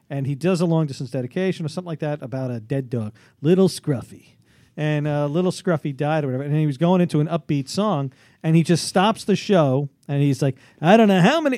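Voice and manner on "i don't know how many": put-on radio host losing composure, higher and louder. Retelling the host stopping the show over a dead dog: imitating Casey Kasem losing composure. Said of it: "really losing".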